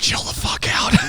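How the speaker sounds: soft, hushed whisper. Retelling what he told the horse he was riding, whispering.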